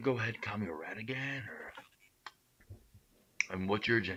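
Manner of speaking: sloshed, dragging words. A drunk man talking in a played clip, in slow drunk speech. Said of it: "he's literally talking so slowly because he's so drunk".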